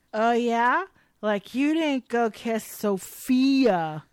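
play-acted, slow, spat-back delivery. Recapping a scene where one character answers another: retelling a spat-back retort. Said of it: "Lily spits back".

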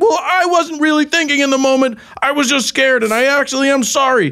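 mock very high, worked-up heated shouting. Retelling a man's reply in a heated argument over a thrown dog, retelling a yelled apology. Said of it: "we were both sort of yelling apologies".

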